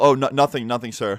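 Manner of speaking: ordinary delivery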